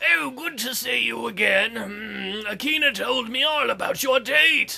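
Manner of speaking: put-on aged, elderly old man voice. Playing a priest greeting the player character, doing the old man voice. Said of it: "I forgot the old man's voice".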